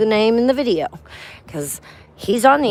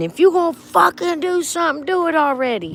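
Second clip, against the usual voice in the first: put-on high, shrill, screaming elderly woman voice; 9 semitones higher than usual. Retelling what an old lady behind someone screamed: imitating an old lady screaming.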